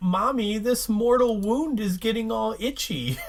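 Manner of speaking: high, taunting, mocking voice. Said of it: "taunting her and mocking her".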